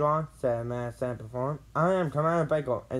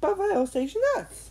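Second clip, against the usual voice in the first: nervous, anxious voice, pitched much higher. Narrating a story, voicing Carl as the boys search the ocean floor: asking nervously. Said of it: "Carl asked nervously".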